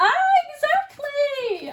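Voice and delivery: very high-pitched voice. Reacting to a card message with delight: really high-pitched voice. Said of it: "my really high-pitched voice".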